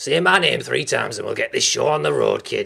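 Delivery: gravelly, rough impression voice. Recalling a film character's catchphrase, doing a Beetlejuice impression. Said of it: "Beetlejuice's catch catchphrase".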